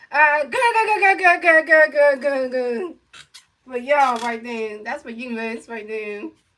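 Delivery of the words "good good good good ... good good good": loud, taunting, repeated cartoon-style laughing voice. Laughing at a team that lost the whole series: Popeyes laughing voice. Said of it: "in the Popeyes laughing voice like this".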